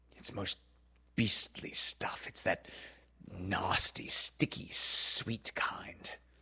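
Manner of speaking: shuddering while speaking. A father speaks to John while Wendy fetches his medicine, shuddering.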